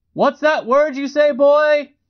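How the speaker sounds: high mocking jeer.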